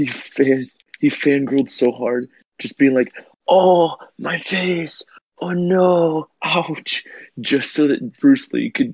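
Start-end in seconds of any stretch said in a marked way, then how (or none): 3.5-7.0 hammed-up fake pain whimpers, very high and slow. Retelling how a starstruck actor milked a moment, retelling exaggerated fake pain. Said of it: "he milked it for all it was worth".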